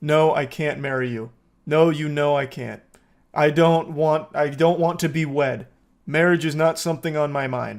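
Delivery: flat, level, emotionless monotone. Imitating how she delivers her lines in these scenes, flat monotone. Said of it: "she kind of says it just like that. Like there's no real emotion".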